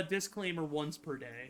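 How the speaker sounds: ordinary delivery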